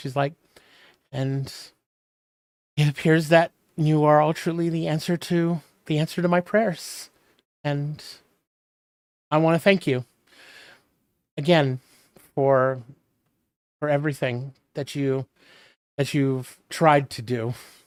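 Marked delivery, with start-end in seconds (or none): 1.1-17.5 near tears, halting, words breaking mid-phrase. Game master voicing Seiko addressing the party, Seiko teary-eyed. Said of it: "She gets kind of teary eyed. / She gets kind of teary eyed".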